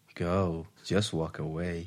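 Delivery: mock sultry, sexy voice, very slow. Saying a suggested line in the speaker's sexy voice, put-on sexy voice. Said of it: "She'll do it in my sexy voice".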